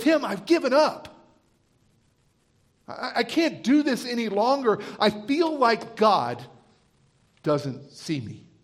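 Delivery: mock tearful weeping, slow with swooping pitch. Retelling what she said after the doctor's news: imitating someone weeping. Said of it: "she's weeping and she's crying".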